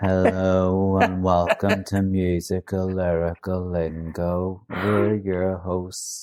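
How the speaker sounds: flat, dull, unvarying monotone, drawn out. Podcast host imagining the show's intro done in a monotone voice. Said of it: "if we had a monotone voice doing a podcast".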